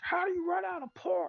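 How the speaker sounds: mock outraged shriek, pitched very high, furious. Retelling an angry worker's outburst about pork: imitating someone screaming angrily. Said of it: "fucking screaming like a psycho".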